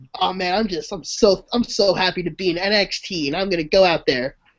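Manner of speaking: cheery, upbeat, happy-go-lucky, gushing voice. Describing how the wrestler comes in smiling: imitating Apollo Crews smiling. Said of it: "All he does is come in, he smiles".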